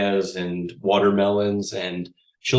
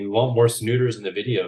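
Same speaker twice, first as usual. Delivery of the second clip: normal talking voice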